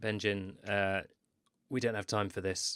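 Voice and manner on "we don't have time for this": whispering in character voice. Speaking in character to another character in the game: in-character whisper. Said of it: "I'm just gonna whisper to Ben".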